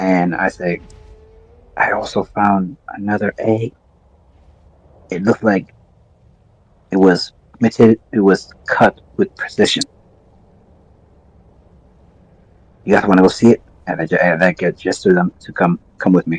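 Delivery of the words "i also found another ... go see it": quiet whisper in a put-on voice. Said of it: "as I whisper it over to Rawls".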